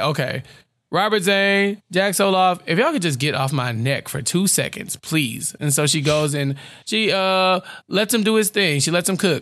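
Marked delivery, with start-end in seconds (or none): none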